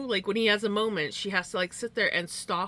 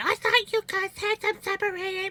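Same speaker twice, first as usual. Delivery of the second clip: put-on shrill yell, pitched very high; 12 semitones higher than usual. Retelling a story, the speaker acts out Mom yelling at the others. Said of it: "Mom yelled, going".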